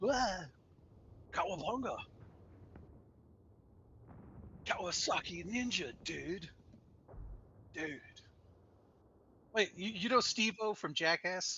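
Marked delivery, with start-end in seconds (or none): 0.0-8.0 whispered, breathy, put-on California surfer-dude accent. Speaker showing how he copies the accents of people he meets: put-on California surfer accent. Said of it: "I'll start talking like them".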